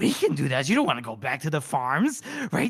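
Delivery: put-on silly, goofy cartoon creature voice. A storyteller voices the character Ben in a Gollum-or-Jar-Jar voice. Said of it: "I can't tell if I'm doing Gollum or Jar Jar Binks".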